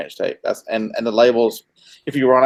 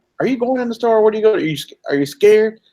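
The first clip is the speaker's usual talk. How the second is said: shrill, very high-pitched taunting shout; 11 semitones higher than usual. Retelling how a brother yelled from outside a store: imitating brother yelling. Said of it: "my brother's yelling at me".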